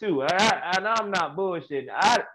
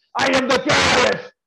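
hollered, rough, raised wrestler-style yell; 8 semitones higher, 7 dB louder than usual. Retelling how people acted in their wrestler characters, imitating a yelled wrestler character. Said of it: "they'd be in their little wrestler character".

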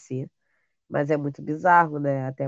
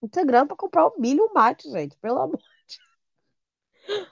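very high, nervous laughing through the words; 12 semitones higher, 3 dB louder than usual. Speaking to her audience, nervous laughter. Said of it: "eu tô rindo, mas é, é o riso de nervoso".

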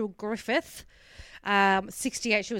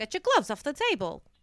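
put-on New York accent; 4 semitones higher than usual. Retelling how an actress said a line, like a New Yorker. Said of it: "Like she's like this New Yorker".

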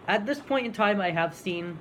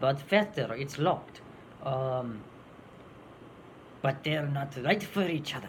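weird, overdone, put-on Spanish accent; 3 semitones lower than usual. Recalling playing the Conquistador in an Addams Family show: weird over-exaggerated accent. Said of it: "this really weird, over-exaggerated accent".

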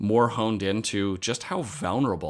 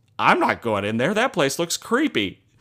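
mock chuckling, laughing, high, swooping; 7 semitones higher, 5 dB louder than usual. Retelling what a man said as he started laughing, acting out laughing speech. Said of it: "he starts laughing and he goes".

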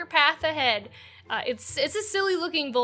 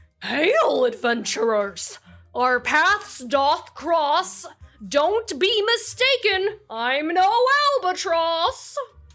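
high, loud giant vulture creature voice; 5 semitones higher, 6 dB louder than usual. Voicing a vulture who greets the adventurers: voicing a vulture character. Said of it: "the vulture just puts its hands on his hips and says".

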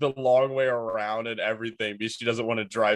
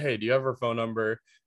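put-on nonchalant, casual tone. Retelling asking a tenant for a phone number: imitating own nonchalant question. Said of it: "super nonchalant about it".

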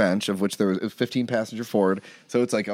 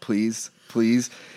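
acted, mock pleading tone. Retelling a run-in with the Mounties on tour, the speaker acts out: retelling a plea. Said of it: "pleading with police after trailer broke".

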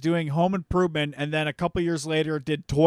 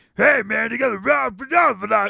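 rough, creaky, cartoon-style voice; 5 semitones higher, 5 dB louder than usual. Retelling a stand-up bit about a guy at the store: imitating Tom Kenny's voice for a store guy. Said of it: "he has a different voice for the person".

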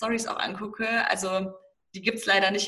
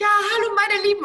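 very high, piping, squeaky put-on voice; 12 semitones higher, 6 dB louder than usual. Imitating an own past greeting into the camera: own past squeaky voice. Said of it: "Du redest voll komisch mit so einer Piepsstimme".

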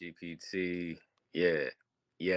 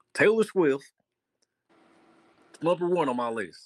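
caricature voice, very high, loud and drawn-out; 10 semitones higher, 8 dB louder than usual.

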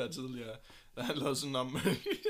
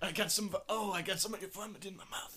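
higher-pitched, mock caring, tender boyfriend voice; 6 semitones higher, 3 dB quieter than usual. Retelling a boyfriend roleplay video for the others: imitating a boyfriend roleplay video. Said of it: "og så er han sådan".

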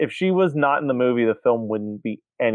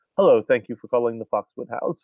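put-on prim and proper phone voice. Retelling a movie scene where Winston answers the phone mid-yell: prim and proper voice. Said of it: "it's just prim and proper".

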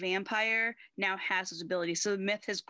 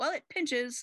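put-on British accent with raised pitch; 6 semitones higher than usual. Retelling a scene from the Pangs episode, the speaker quotes Spike's reply in a Spike British voice. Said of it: "only in a spike British voice".

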